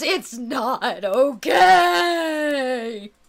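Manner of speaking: loud, sobbing wail, okay drawn out. Voicing a weeping man at a tavern table: wailing. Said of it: "He wails".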